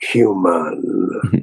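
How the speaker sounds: utterly disdainful, contemptuous single word. Retelling looking at Patrick and saying one word: mock-disdainful 'human'. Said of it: "like most disdainful way anybody say anything about anybody".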